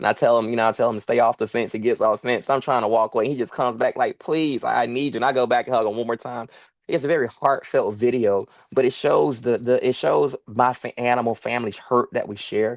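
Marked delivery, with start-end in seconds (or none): 4.2-5.2 slower, mock-tearful, crying begging. Retelling a heartfelt video, the speaker voices him coming back, imitating a crying plea. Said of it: "He's just crying".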